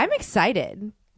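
plain

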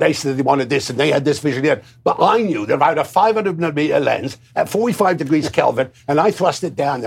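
put-on gradually slipping into a Cockney accent. Retelling how Freddie Young explained a shot, as Freddie Young with imperfect cockney accent. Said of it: "I'm not doing the accent that well because he was not quite as working class and I'm a cockney".

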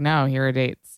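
ordinary delivery

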